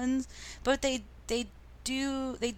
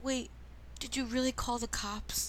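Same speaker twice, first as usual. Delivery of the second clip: play-acted nervous, suddenly scared voice; 3 semitones higher, 5 dB quieter than usual. Retelling a movie line where the character gets scared: imitating a scared voice. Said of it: "'Cause he gets all scared for a second".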